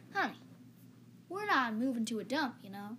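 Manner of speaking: mock Southern American accent. Retelling what someone said, done in a put-on southern accent. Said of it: "I'm just going to do with a Southern accent".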